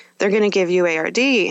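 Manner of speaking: normal talking voice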